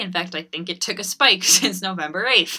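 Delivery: nervous laughter leaking through the speech.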